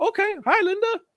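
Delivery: very high, silly, chirpy voice.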